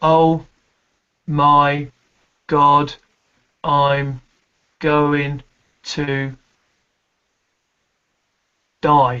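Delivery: very slow, halting, pause, last word held. Speaker demonstrating how to hang the last beat, hanging the last beat. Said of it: "always hang the last beat".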